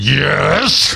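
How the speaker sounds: put-on growled, growly voice. Imitating a kid's rude-sounding answer to her dad: imitating a growled yes. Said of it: "unless it sounded more like".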